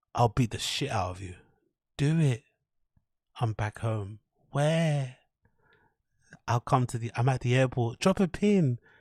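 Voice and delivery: soft, gentle, sweet, flirty tone. Speaker rereads the quoted exchange between two men as a demonstration: softer tone. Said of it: "in a softer tone".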